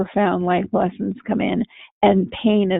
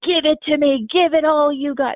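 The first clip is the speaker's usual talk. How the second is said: high, play-acted screaming, defiant; 7 semitones higher than usual. Describing a character on a shrimp boat in a storm screaming at God, imitating someone screaming. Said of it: "he's screaming at God during that storm".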